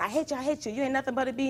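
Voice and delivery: mock yelling. Retelling an argument as she leaves, the speaker acts out the man, imitating someone yelling. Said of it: "and he's still yelling".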